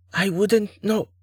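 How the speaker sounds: voice abruptly tightening, suddenly tight. Mora answers Duren's question about her father, voice suddenly tight. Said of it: "her voice suddenly tight".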